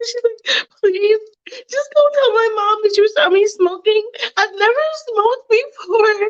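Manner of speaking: crying, very high-pitched and tearful. Retelling a girl's plea on the ride home: imitating someone crying. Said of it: "Mia's crying the whole way home".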